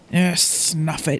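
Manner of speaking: low, rough, growling dismissive tone. A woman at dinner pushes her sorbet away, then speaks, growling. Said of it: "she growls".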